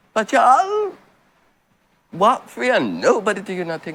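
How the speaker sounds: high, loud, mocking, dismissive tone.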